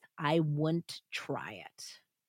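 teeth-clenched delivery. Narrator voicing Lizzie's reply as Nellie explains she is leaving, through gritted teeth. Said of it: "said through gritted teeth".

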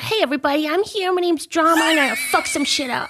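incredibly aggressive, fast, high-pitched animal voice. Asked to do a voice for Drama, the speaker performs an aggressive Drama voice. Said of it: "I usually make my animal voices like incredibly aggressive".

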